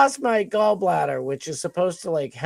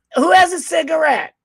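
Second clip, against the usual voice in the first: shrill, very high yell; 10 semitones higher, 4 dB louder than usual. Retelling how a loud woman called out in the packed lobby: imitating a woman yelling. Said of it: "she yells".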